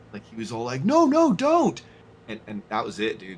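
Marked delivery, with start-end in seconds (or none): 0.8-1.7 very high-pitched, shrill, loud yelling. Retelling how a man yelled at him after he jumped in the harvester. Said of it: "he started to like yell at me".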